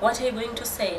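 usual speaking voice

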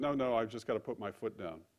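usual speaking voice

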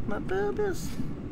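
high, whiny wail.

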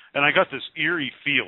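normal talking voice

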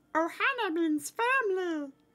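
high cartoon creature voice. Collecting coins in a game, the speaker remarks in a Stitch voice. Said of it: "That's my Stitch voice".

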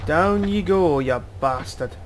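punchy mock Scottish accent.

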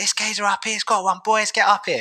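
acted-out high shouting, hollering. Retelling how an angler shouted down to his friends: imitating someone shouting. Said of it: "he shouted down to his friends".

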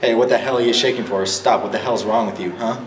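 usual speaking voice

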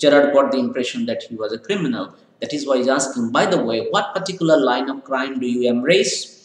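ordinary delivery

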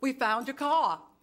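ordinary delivery

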